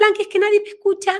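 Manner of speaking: high, rushed, tiny little voice, complaining.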